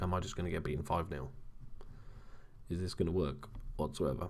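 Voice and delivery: ordinary talk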